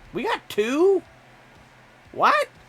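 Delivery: very high, loud, drawn-out voice crack. Working on a car and finding two body kits: voice cracking. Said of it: "there went my voice crack again".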